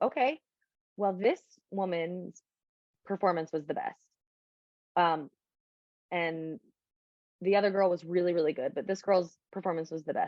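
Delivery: ordinary talk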